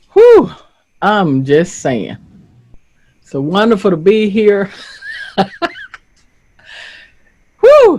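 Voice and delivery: words bubbling through laughter, swooping pitch. Trying to get the words out between laughs, laughing while talking. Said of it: "I'm laughing. I'm laughing".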